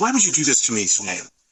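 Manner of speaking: mock aggrieved, upset, reproachful voice. Retelling what he said on the phone after a sick call, mock-upset complaint. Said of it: "he's getting all upset".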